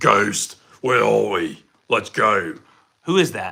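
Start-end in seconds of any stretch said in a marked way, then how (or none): 0.0-2.5 put-on low voice with a British military accent. Describing a British English game dub, do a Call of Duty soldier voice. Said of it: "I sound like the guy from Call of Duty".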